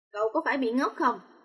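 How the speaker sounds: plain reading voice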